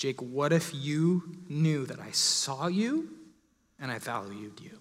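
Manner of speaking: quiet, soft, hushed voice. Retelling words he felt spoken to him while praying, in a quiet voice. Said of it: "just this quiet voice".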